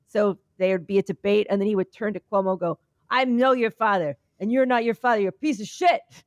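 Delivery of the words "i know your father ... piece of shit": hot-tempered, angry New York tough guy voice. Retelling a debate jab from a candidate: imitating an angry new york guy. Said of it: "a real, like, New York guy who's angry".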